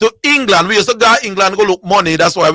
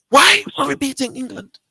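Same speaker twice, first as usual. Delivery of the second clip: pitched-up half-whispering; 6 semitones higher, 4 dB quieter than usual. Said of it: "I'm whispering".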